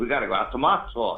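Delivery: normal talking voice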